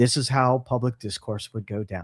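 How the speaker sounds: put-on radio broadcaster voice. A line he later names as his Paul Harvey voice. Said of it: "That was my Paul Harvey voice".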